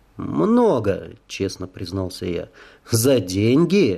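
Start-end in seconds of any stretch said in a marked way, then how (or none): 2.9-4.0 stern, strict, severe tone. A stranger questions a former soldier, stern question. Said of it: "строго спросил незнакомец".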